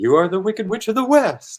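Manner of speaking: pitch climbs then falls over the phrase. Showing how they wanted a line read: pitch rises then falls on line. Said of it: "I wanted it to go up and then down".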